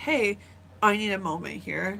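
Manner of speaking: plain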